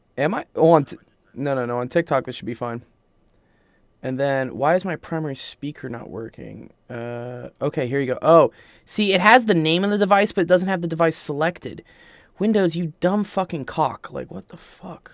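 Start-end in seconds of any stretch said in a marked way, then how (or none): 12.4-15.1 fed-up, exasperated, extremely frustrated swearing outburst. Cursing at Windows when the audio device is not selected: extremely frustrated. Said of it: "I'm extremely frustrated".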